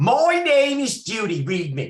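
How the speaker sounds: put-on very thick New York accent, very high and loud. Retelling an event, quoting a woman who sat down for a reading, in Judy's thick New York accent. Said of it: "Thickest New York accent I ever heard".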